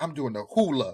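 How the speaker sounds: solemn, dead serious, earnest tone. Retelling a friend's line, imitating someone dead serious. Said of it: "he was so serious".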